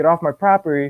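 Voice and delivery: ordinary talk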